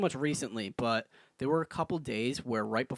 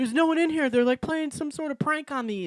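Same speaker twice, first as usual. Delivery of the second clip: mock crying, higher and louder; 14 semitones higher, 4 dB louder than usual. Retelling a dream where crowds tried to break in: imitating own crying. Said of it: "crying in my dream".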